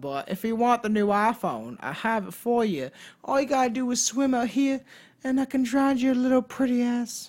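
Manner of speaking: put-on Southern accent. Voicing a female character, in a put-on Southern accent. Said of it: "I don't know why she's Southern".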